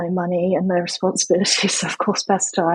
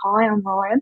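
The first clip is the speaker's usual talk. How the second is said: put-on light Australian accent, just a hint of twang. Retelling hearing a voice at a group job interview: Ryan's slight Aussie twang. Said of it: "A slight twang".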